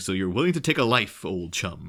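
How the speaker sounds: very gentle will-o'-the-wisp voice. Quoting a movie line about taking a life: Adam West voice. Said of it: "very gentle kind of will-o'-the-wisp voice".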